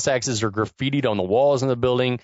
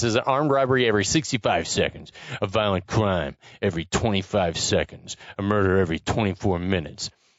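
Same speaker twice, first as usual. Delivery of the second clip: put-on, affected gangster-style voice, lower; 4 semitones lower than usual. Retelling a movie's opening voiceover: imitating Stallone's affected voiceover. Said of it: "his take on a gangster voice".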